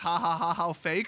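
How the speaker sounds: ordinary delivery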